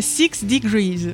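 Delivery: words said with an English accent. Naming the first social network while speaking French, in an English accent. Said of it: "attention accent anglais".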